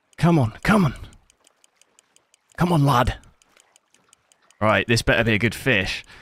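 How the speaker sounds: out of breath, panting, winded. Urging on a big moment after exertion, out of breath. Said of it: "I'm out of breath".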